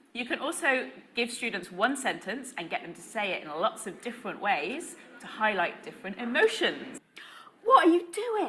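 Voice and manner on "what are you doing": startled, astonished, very high raised voice. Showing how students can say one sentence different ways, surprised.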